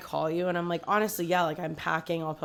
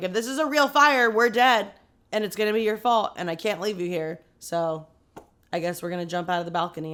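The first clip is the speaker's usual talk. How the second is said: usual speaking voice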